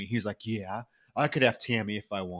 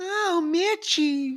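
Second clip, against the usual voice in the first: put-on very high-pitched toddler baby talk; 4 dB louder than usual. Retelling a film scene where Tammy turns into a toddler: imitating Tammy's toddler voice. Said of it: "turn into a toddler. Her voice is like".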